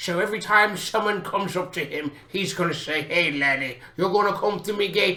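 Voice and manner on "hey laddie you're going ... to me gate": storybook fantasy dwarf voice. Showing how the dwarf gatekeeper character will talk to anyone approaching, dwarf voice. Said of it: "he's gonna be a dwarf, and he's gonna talk like this".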